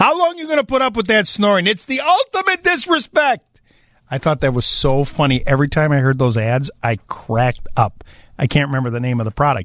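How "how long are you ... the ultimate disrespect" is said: put-on very high voice, heavy New York Italian accent. Recalling an old snoring-remedy ad, the speaker quotes its pitchman in a thick New York Italian accent. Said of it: "some guy with a thick New York Italian accent".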